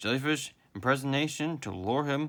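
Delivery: ordinary delivery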